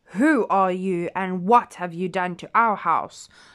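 loud, roaring, bellowing bear voice. Narrator reading Daddy Bear confronting Goldilocks in his house; roaring. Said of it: "roared Daddy Bear".

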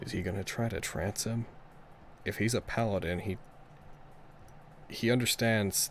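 hushed whisper, barely voiced, very quiet. Voicing a character asking another character quietly about a trance: whispering.

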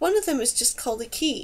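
ordinary delivery, nothing marked

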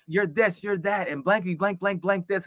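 high, wild heckler screaming abuse.

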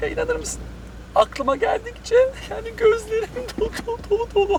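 high, fake tearful whining, put-on crying.

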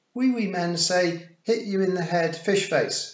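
very high, loud, cheerful and happy voice. Wentworth speaks to Tiffany; happily. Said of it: "said Wentworth happily".

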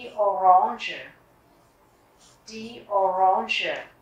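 "orange" stressed, said slow and loud. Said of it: "nhấn vào chữ orange".

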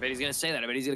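ordinary talk, nothing marked

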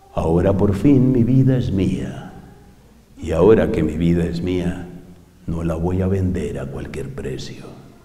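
very deep, slow, unhurried, almost hoarse voice. Showing the transcendent voice of online advice-givers: low, slow, almost hoarse voice. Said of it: "bajar más o menos entre 3/4 de octava y 1/8 de octava su tono de voz. Hablar despacio, casi ronco".

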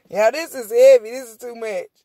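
loud, words pushed through laughter. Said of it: "I'm in here laughing".

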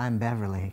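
said sweetly. A woman introduces herself to a man gaping at her, said sweetly. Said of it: "she said sweetly".

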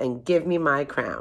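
plain reading voice

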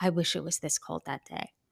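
hushed, soft half-whispered aside. Retelling what someone said walking down to the bridge: retelling a whisper. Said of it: "kind of in a whisper".

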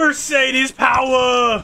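cartoonish character voice. Cheering his Mercedes on while running down the straight, sounding like Klaus. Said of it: "You sound like that".

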